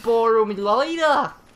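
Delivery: bad put-on British accent. Joking with another speaker in made-up British slang: bad put-on British accent. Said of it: "That's not even British".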